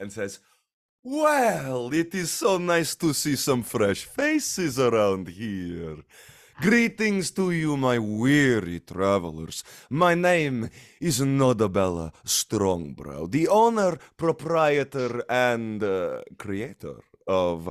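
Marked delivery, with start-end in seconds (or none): 1.0-17.7 grandiose, loud voice with big pitch swoops. Storyteller voices the owner greeting unfamiliar visitors, grandiose Nodabella Strongbrow voice. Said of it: "in a very grandiose manner".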